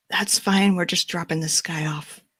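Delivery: soft, hushed whisper. In a roleplaying game scene, a player's character replies to strangers, whispering back. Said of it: "I just sort of whisper back".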